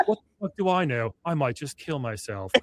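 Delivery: serene, calm, even text-to-speech narrator voice. Telling the other speaker how an AI voice reads their writing aloud; imitating calm AI woman voice. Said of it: "hearing this calm woman being like".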